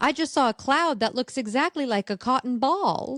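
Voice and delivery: quirky emphasis landing on unexpected words. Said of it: "the emphasis she puts on certain words".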